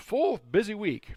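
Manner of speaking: voice cracking. Host running through the week's school sports schedule, voice cracking. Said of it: "As my voice cracks".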